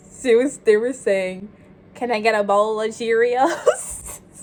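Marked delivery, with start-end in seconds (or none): 1.9-4.1 put-on down-home country accent. Quoting callers asking for a bowl of Cheerios in a country voice. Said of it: "they were like in the country voice".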